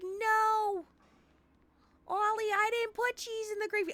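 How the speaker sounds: put-on very high, slow New York accent, "no" stretched out. Retelling a scene where Helen answers her husband, in Helen's New York accent. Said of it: "I don't know why they have New York accents".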